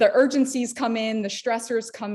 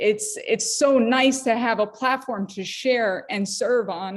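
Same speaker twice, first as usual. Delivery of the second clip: getting a little emotional, slightly choked up. Saying how nice it is to have a platform, getting a little emotional. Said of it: "I'm getting a little emotional".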